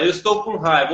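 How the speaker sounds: normal talking voice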